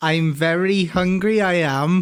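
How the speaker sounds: unconvincing, attempted put-on Welsh accent. Asked during a crash course to give some welsh talk, attempted welsh accent. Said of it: "give me some Welsh talk".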